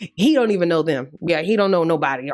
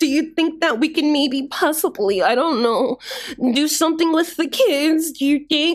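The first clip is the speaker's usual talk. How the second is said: put-on little-girl baby voice; 10 semitones higher than usual. Retelling how she talks to Drew in a clip; little-girl baby voice. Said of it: "she gets to talking like a little girl baby".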